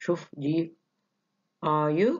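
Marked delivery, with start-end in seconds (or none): 1.6-2.2 pitch rises on "are you". Explaining question tags that show surprise, rising tone on are you. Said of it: "rising tone".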